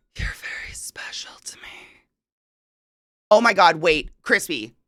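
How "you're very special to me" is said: creepy, very soft whisper. Pitching a new idea, a player acts out the line in the creepiest way possible. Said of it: "saying in the creepiest way possible".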